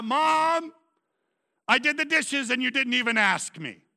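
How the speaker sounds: loud, high-pitched hollering. A parent retells their son Jacob calling out after the dishes: imitating Jacob yelling. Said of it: "he yells out".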